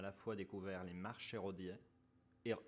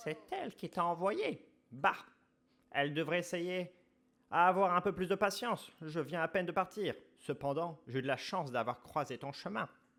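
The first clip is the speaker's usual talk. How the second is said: put-on granny voice, higher and louder; 9 semitones higher, 8 dB louder than usual. Voicing a game character reading her dialogue: grandma voice. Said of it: "la voix de grand-mère".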